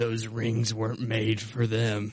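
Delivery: growly, demonic, possessed-sounding growl. Retelling what a priest said at the hospital, in a growly voice. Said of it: "talks in this growly voice".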